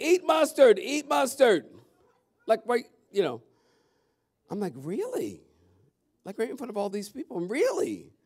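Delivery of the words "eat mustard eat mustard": crowd hollering, high, very loud, drawn out. Recounting people at a church yelling at them, imitating people yelling. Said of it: "They started yelling".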